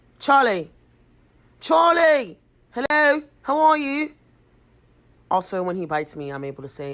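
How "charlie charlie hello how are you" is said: put-on English accent, higher, louder, slower. Greeting the speaker's cat Charlie, in an English accent. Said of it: "so I could literally talk to him in an English accent".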